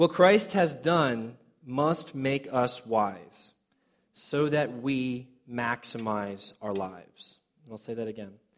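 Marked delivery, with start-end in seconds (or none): 0.0-7.4 very slow, deliberate, each word placed carefully. Speaker boils the passage down to one sentence, slow and deliberate. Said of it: "so I'll try to say this slowly".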